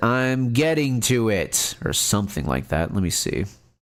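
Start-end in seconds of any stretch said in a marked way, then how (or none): 0.0-1.8 loud, rude, brusque, drawn-out tone. Retelling how a mother answers her son: imitating a loud, rude reply. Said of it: "she loudly and rudely says".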